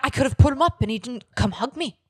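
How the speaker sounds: put-on high Irish accent. Retelling what she said in the confessional, imitating her in an Irish accent. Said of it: "Why is she Irish all of a sudden?".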